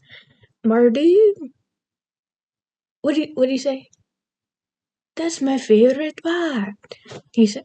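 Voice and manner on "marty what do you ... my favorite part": put-on high Irish-accented voice. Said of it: "That's from Brave".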